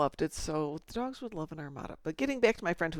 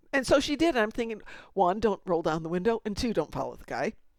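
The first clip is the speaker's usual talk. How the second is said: normal talking voice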